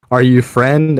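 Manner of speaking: calling out loudly, voice projected far. A voice shouts out toward a man running away: calling out. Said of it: "calling out voice".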